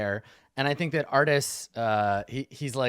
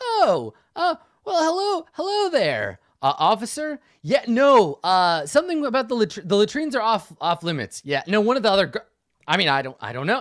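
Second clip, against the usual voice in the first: loud, pitched-up talking; 7 semitones higher, 6 dB louder than usual. Artist answering an officer after a friend taps his shoulder, talking really loud. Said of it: "And he's talking really loud".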